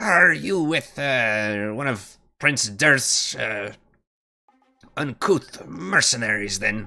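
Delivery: words spat out sharply. Voicing a character who spits before questioning a dwarf: spitting out the words. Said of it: "kind of spits and says".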